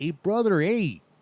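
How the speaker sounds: relaxed Vegas-style speech. Contrasting local dialects for a guest: imitating relaxed Las Vegas dialect. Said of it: "But really relaxed".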